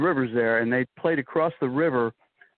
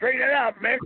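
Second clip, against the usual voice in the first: shrill, very high, excited yell, acted out; 12 semitones higher than usual. Retelling the announcer's call of a foul ball: imitating Mel Allen's scream. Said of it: "Allen screamed".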